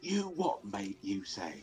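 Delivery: put-on British accent. Imagining how Jack Atlas would talk: Jack Atlas with a British accent. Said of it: "Get a little British accent".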